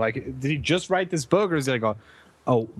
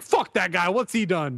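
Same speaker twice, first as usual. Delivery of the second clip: play-acted, exaggerated angry tone, dismissive; 3 semitones higher than usual. Co-host imitating his own usual reaction to interview guests, mock-angry tone. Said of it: "just an angry tone".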